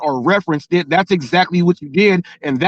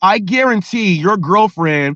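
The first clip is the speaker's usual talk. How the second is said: usual speaking voice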